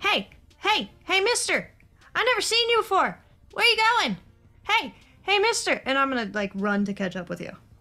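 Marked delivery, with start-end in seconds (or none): 0.0-5.8 put-on very high, swooping, young-sounding voice calling out. Voicing a fifteen-year-old calling out to a passing stranger: calling out as a fifteen-year-old. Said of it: "I'm just gonna call out to you".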